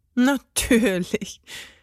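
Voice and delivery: said with a laugh. Answering another's retort, a character replies laughing. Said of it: "lachte Emil".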